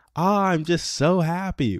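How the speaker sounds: forced cheery delight, very high, slow, drawn out. Coaching someone on smiling, showing the big fake grin to avoid, fake overly happy tone. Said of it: "we don't want you to fake smile".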